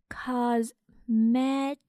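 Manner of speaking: "cosmetics" split into syllables, read very slowly. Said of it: "我们把它拆开来慢速读两遍".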